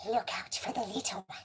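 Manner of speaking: creepy, eerie creature voice. Reading a story aloud, the narrator breaks off to speak: Gollum voice. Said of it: "It occurred to me to speak like Gollum".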